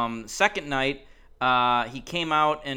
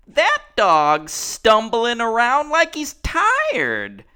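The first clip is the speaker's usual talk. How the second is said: put-on shrill, booming, high, sing-song little-kid voice; 9 semitones higher, 8 dB louder than usual. A speaker retelling a little kid talking to a lady about a dog, little kid voice. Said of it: "I feel like you do the voice better".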